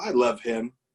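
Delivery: put-on whisper. Retelling what Tammy whispered to herself after a call: imitating Tammy whispering. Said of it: "kinda whispers to us-, herself".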